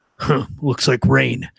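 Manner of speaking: rough, raspy, creaky character voice. Describing what a game character always says: Geralt voice. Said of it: "all I can hear him say now is".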